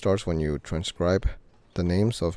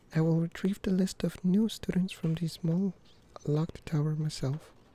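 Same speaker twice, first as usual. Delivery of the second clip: very high put-on woman's character voice; 11 semitones higher, 3 dB quieter than usual. Reader voicing a woman's lines from the text: doing a woman character's voice. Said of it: "I think I'm doing her voice more better now".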